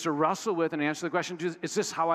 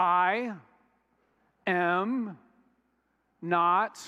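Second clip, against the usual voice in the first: very slow, drawn-out, careful, deliberate reading aloud. Reading a Bible verse aloud to everybody, very slow reading. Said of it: "I'll read them slow".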